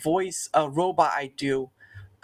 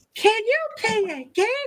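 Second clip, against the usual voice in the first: high-pitched, slow assumed voice. Showing the only Elmo impression the speaker can do: Elmo voice. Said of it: "sort of like the Elmo's like".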